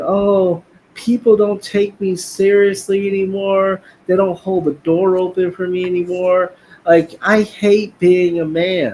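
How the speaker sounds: tearful, crying, complaining tone. Retelling a woman's complaint from her video: imitating someone crying. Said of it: "she made a video where she was crying".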